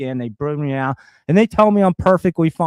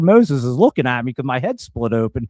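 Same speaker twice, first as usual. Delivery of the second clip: usual speaking voice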